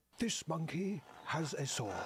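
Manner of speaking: slow, measured, put-on nature-documentary narrator voice. Narrating about a poisonous monkey in David Attenborough voice. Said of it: "that's me doing David Attenborough. I don't sound like him normally".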